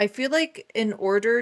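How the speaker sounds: ordinary delivery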